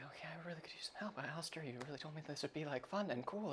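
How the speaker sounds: very quiet, hushed under-the-breath muttering. Storyteller voicing Rory under dim lighting, Rory muttering to himself. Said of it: "Rory sort of like muttering himself".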